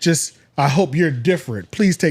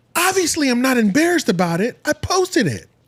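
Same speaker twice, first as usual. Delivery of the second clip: weird voice pitched very high; 9 semitones higher than usual. Imitating the man in the video's weird voice. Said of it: "let me try to match his voice".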